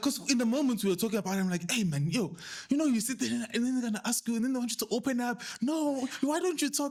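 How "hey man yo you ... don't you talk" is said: full-on high-pitched yelling. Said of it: "Now I'm yelling".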